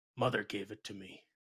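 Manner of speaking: very low mumbling mutter under the breath. Game master voicing an orc asked about the talisman: muttering under his breath. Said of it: "he just kind of mutters under his breath".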